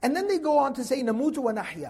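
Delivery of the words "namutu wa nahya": plain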